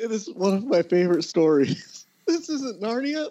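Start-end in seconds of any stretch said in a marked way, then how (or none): 2.3-3.3 very high-pitched, shocked exclamation. Retelling a man standing up in a movie theater and yelling: mock-shocked tone. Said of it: "like in like a shocked like tone".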